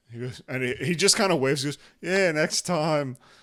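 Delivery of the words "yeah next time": dejected, sad character voice. Voicing a guard waving goodbye as he walks off: sad character voice. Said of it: "just sad".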